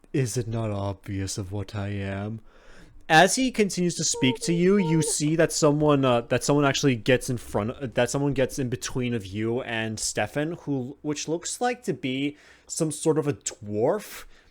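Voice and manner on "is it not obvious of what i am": low, hushed, unsettling creepy voice. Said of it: "You sound creepy as fuck".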